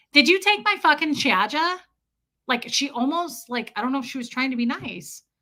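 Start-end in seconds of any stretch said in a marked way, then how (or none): 0.2-1.8 sharp put-on New York street accent, pitched up. Retelling what a stranger in New York said: imitating a New York accent. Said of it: "an accent like yours".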